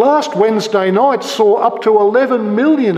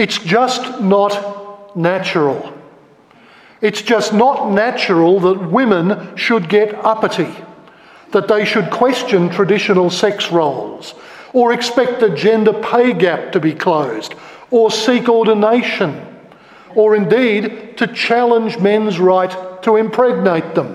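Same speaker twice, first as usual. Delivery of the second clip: ordinary talk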